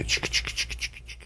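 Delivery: soft hissed chick-chick gnawing sounds. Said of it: "you'd hear".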